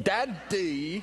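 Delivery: put-on "daddy" called out in a British accent. Recalling hearing him call out from somewhere, British accent on 'Daddy'. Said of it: "he says my name with a British accent".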